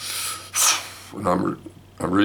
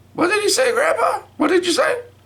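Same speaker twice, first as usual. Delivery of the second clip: put-on very high little girl voice. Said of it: "Chanel goes".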